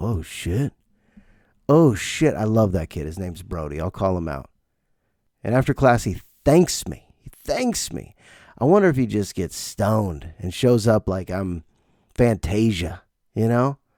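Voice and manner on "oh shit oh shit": put-on muttering under the breath. Retelling how a student reacts in class: imitating someone muttering under breath. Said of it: "you just hear him under his breath go".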